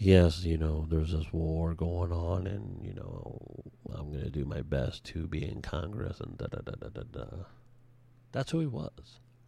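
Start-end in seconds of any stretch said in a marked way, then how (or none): 0.0-7.3 level, unvarying, flat droning monotone. Imitating a candidate speaking in a room: imitating a monotone voice. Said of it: "he would have this monotone voice".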